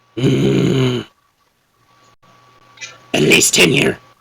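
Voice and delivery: gruff, creaky troll voice with broken English. Voicing a troll who caught up and warns about the tunnel: troll voice. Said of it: "it's a troll".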